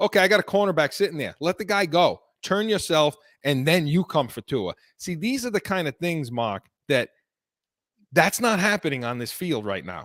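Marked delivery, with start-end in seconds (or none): none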